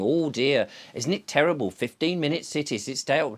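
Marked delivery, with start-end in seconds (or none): none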